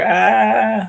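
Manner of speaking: high, loud, pained scream.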